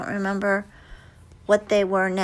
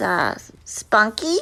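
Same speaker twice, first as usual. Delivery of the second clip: ordinary delivery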